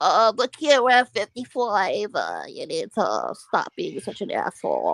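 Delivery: very whiny, complaining, slow, swooping voice. Imitating how Mark always talks on stream: whiny voice imitating Mark. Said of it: "he's got that very whiny voice".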